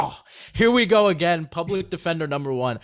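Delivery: sarcastic, dismissive scoffing jab. Imitating how Jack would react to defending Tua: imitating Jack scoffing. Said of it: "I would have loved to hear him scoff".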